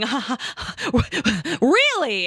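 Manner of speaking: slow put-on giggle. Retelling the car ride home and a companion's reaction; imitating Pat giggling. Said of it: "I can feel Pat like start giggling".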